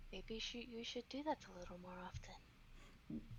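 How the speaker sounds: hushed, barely-there, very quiet whisper. Voicing a character who leans in close to a player: whispering in character. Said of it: "leans in and whispers to you".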